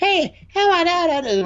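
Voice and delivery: put-on adult putting on a very high, slow kid voice. Recalling the second reporter's question, in an adult faking a child's voice. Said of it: "someone voiceover doing like a trying to do a child's voice".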